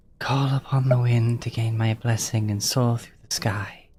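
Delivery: gentle, soft, whisper-like voice. Game master voicing a presence only Mary and Urgo can hear, in a gentle, whispery voice. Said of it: "carrying a voice like whisper".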